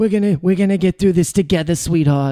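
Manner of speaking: put-on old lady voice with Boston accent. Speaker shows the voice she always slips into: Boston old lady voice. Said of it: "I turn into some Boston old lady".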